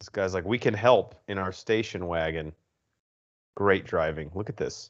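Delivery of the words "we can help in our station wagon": ordinary talk, nothing marked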